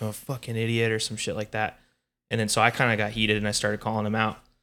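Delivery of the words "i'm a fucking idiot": mock mutter, quieter, slower. Telling a story about a tense encounter, quoting a man's remark: retold mutter under his breath. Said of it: "started under his breath".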